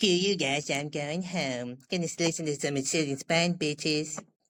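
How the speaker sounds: put-on cartoon voice, slow, line drawn out. Showing off voice impressions when asked: Cartman voice.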